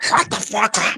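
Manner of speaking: quacky cartoon duck voice. Quoting Donald's line at the very end of a favorite video, in the Donald Duck voice. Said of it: "it's in the Donald Duck voice".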